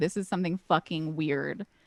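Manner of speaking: usual speaking voice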